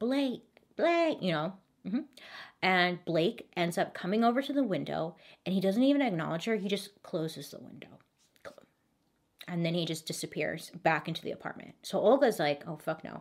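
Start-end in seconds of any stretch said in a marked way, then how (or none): 0.0-1.2 mock insistent, high, urgent yell. Retelling how a woman outside an apartment yells for a man, imitating someone yelling. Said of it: "she's yelling".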